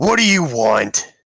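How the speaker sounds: loud, slow, booming voice. Voicing a fort guard calling out to approaching players: booming guard voice. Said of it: "a voice boom out".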